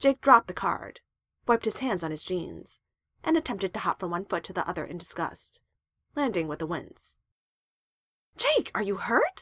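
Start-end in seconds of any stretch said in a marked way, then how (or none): 8.4-9.4 anxious, frantic, high-pitched delivery. Charles asks Jake after he lands with a wince; frantic demand. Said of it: "Charles demanded frantically".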